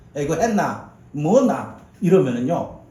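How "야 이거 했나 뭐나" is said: rough, harsh-sounding Gyeongsang Korean dialect accent. Imitating how gyeongsang people talk, in harsh gyeongsang dialect. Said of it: "우리 경상도 사람은 어떻게 있으면 어떻게 합니까? ... 들리는 어감이 사납습니다".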